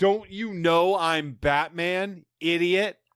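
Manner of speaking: mock livid, seething, slow, deliberate outburst. Retelling a character's outburst at a woman: imitating someone livid. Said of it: "And he is livid".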